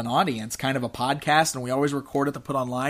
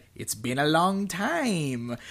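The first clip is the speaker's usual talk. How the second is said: cartoon villain voice, swooping, dragged out; 3 semitones higher, 4 dB quieter than usual. Retelling a man greeting another at a registration desk, in Skeletor voice. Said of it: "in his Skeletor voice said".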